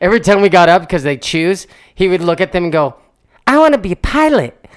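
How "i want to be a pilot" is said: put-on very high, small child's voice. Retelling what a son said to them each time, in [name]'s little kid voice. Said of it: "he used his little kid voice".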